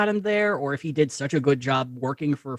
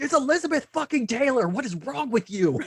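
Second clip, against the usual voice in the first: very high-pitched, pitched-way-up hollering yell; 10 semitones higher than usual. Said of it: "it's [name] yelling at his son being like".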